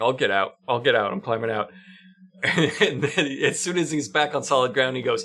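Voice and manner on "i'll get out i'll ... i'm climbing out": put-on embarrassed, meek, sheepish, timid voice. Retelling how a man climbs out of a hole, imitating him embarrassed and timid. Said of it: "very embarrassed and timid".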